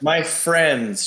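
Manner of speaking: sneering, sarcastic air-quote stress on friends. Voicing a character who says friends in air quotes: air quotes sarcasm on friends. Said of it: "she says, in air quotes, friends".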